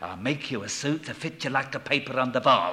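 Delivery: put-on old man's voice with a Yiddish-inflected accent.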